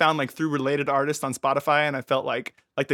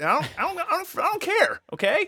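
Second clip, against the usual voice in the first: high yelling in mock, fake anger. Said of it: "Sorry I'm getting so angry".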